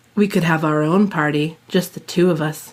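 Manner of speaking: husky suggestive tone. Reading Bruce's line aloud to Elizabeth in the car: husky voice. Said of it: "he suggested in a husky voice".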